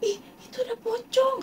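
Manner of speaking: high, tearful, terrified mock scream.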